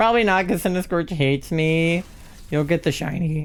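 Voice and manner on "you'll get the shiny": cracked voice, breaking mid-line. Speaker encouraging another player during a game, voice cracking. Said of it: "my voice cracked".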